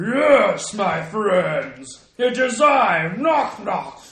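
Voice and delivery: grand, lumbering giant voice with drawn-out yes. Playing a giant named Knock Knock, greeting friends in a Knock Knock giant voice. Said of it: "like a giant tone".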